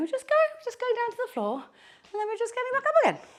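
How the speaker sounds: very high, sing-song, swooping voice, rising in pitch. Leading a group through getting down to the floor and back up, high-pitched voice. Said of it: "Don't know why my voice is so high".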